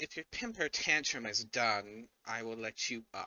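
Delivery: cat-like creature voice. Narrating for the players, voicing a cat they hear: feline voice. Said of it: "you hear a feline voice say".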